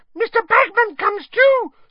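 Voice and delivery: very high, very loud, shrill squeaky cry. Hearing Hermione name the tournament judges, Winky answers: Winky squeaking. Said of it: "squeaked Winky".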